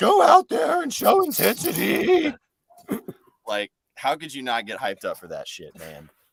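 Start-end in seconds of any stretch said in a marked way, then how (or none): 0.0-2.3 put-on hoarse screaming, higher and louder. Retelling a coach screaming on the sideline with almost no voice: imitating Michael Malone screaming hoarsely. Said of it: "scream on the sideline with the little voice".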